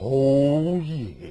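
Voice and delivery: very low, soft, drawn-out ladies'-man growl, stretched "oh".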